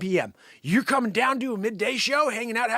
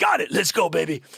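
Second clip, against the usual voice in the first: put-on cool, weird voice, pitched lower; 5 semitones lower, 3 dB louder than usual. Imitating the crazy owner: imitating Jim's cool weird voice. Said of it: "He's got a really cool, weird voice".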